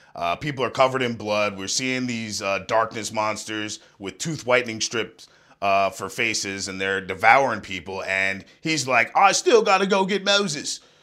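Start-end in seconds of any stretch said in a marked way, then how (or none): 9.2-10.8 very high-pitched, shrill character voice. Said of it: "That's how he sounded".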